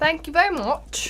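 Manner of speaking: poorly done, fake-sounding put-on British accent. Answering praise in character after the others call for an accent: put-on British accent. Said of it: "I don't think he's British".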